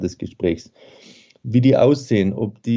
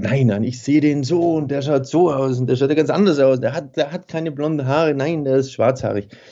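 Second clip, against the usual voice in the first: higher, insistent, argumentative voice. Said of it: "wenn dann die Leute sich streiten bei einer Lesung und sagen irgendwie".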